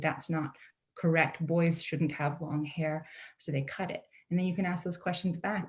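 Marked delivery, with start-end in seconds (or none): 0.0-3.1 slow, stern, laid-down pronouncement. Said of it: "they would say".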